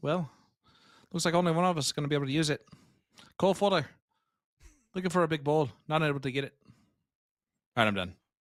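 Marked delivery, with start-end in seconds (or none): 0.0-6.5 attempted put-on Irish accent, slower. Taking a turn at doing an Irish accent: attempted Irish accent. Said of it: "That's pretty good, though, right?".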